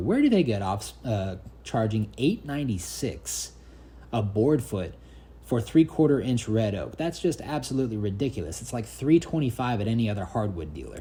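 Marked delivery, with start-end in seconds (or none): none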